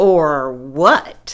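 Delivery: sneering, scornful, contemptuous voice. Reading a character's retort when told to give back a rope, sneering. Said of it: "Sneered Too Tall".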